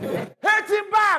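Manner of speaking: mocking, high-pitched slow shout.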